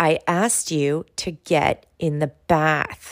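through gritted teeth. A parent showing the voice she uses at bath time, through gritted teeth. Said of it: "your jaw is clenched, you're through gritted teeth, you're using your like teacher mom voice".

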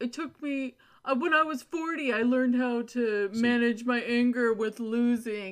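dopey, mocking, weird, loud, drawn-out put-on voice. Quoting the other speaker's own words back to him: weird dumb-sounding imitation voice. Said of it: "Did you notice how she did that weird voice?".

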